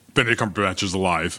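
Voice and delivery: ordinary talk, nothing marked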